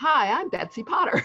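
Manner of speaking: loud TV intro delivery. Asked to say one's name like a tv show intro: tv show introduction voice. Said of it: "say it like it's the introduction to a T V show".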